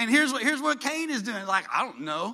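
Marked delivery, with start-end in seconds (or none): 1.7-2.3 put-on arrogant tone, lower. Acting out Cain answering God: acting arrogant. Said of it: "Listen to the arrogance in his voice".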